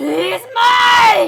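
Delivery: whip-crack, very high, loud, drawn-out creature snarl. Narrator voicing a creature on a rooftop at night, snarling. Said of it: "It snarled, with the force of a whip cracking".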